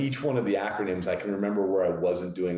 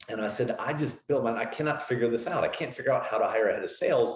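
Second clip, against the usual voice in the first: usual speaking voice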